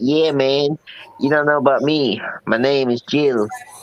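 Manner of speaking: put-on southern American accent. Introducing a made-up character, speaking in a southern accent. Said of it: "southern accent gets me all the time".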